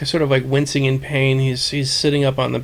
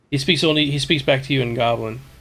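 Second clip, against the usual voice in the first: ordinary delivery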